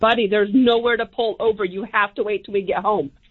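ordinary talk

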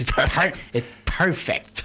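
cartoon duck character voice. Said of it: "Try saying that in a Daffy Duck voice".

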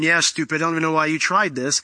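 ordinary talk

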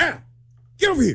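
put-on shout, pitched high. Recounting how Sean called him over at work, retelling Sean's yell. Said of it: "he's yelling at me".

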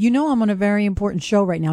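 ordinary delivery

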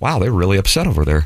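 ordinary talk

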